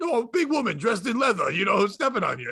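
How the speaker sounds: put-on Italian voice. Retelling what Pedro said when he popped back up: imitating Pedro's Goomba-style voice. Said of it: "I sound like a fucking Goomba?".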